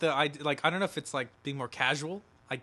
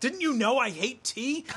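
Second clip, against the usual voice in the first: mock sudden, high-pitched, flipped-out outburst; 9 semitones higher than usual. Retelling a character's reaction to being served tea: imitating someone flipping out. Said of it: "And he flips out".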